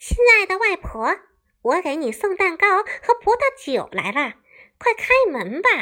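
very high, pinched-throat falsetto. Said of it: "狼捏着嗓子回答".

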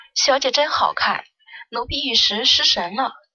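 plain

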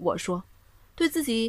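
ordinary delivery

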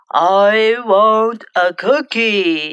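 big, deep voice, pitched low. Reading a story aloud, voicing a disguised cookie inspector: big, deep voice. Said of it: "said Alfie in a big, deep voice".

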